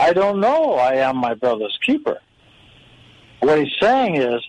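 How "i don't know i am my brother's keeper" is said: know flowing straight into I am, no pause. Rereading Cain's answer with the period taken out, no pause after know. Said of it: "Take the period out and read it like this".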